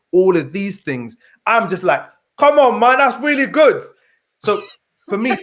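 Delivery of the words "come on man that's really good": raised, pitched-up put-on Nigerian accent. Praising all the things she is launching, in a Nigerian dad accent. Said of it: "What accent was that again?".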